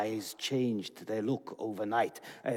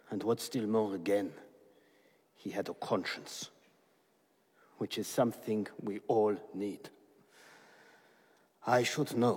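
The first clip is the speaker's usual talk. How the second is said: heavy-hearted, regretful, sorrowful voice. Telling a visitor about the visitor's father and his conscience: sad voice. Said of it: "Why do you sound so sad".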